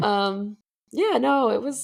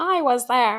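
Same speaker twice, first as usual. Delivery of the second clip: put-on old grandmother voice; 3 semitones higher than usual. Imagining telling great-grandchildren about watching the Super Bowl: grandmother voice. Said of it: "that was my grandmother voice right there".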